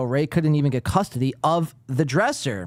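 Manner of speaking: ordinary talk, nothing marked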